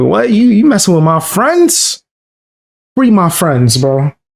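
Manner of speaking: animated anime hero voice, pitch swinging all over. Acting out how Luffy would react: Luffy voice. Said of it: "Luffy woulda did what Trump did".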